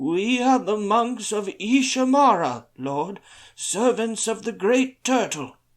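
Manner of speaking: very high trembling voice. Narrating, Taranlin answers a man who asked in a surly voice: quavering voice. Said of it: "Taranlin answered in a quavering voice".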